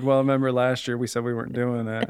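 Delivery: normal talking voice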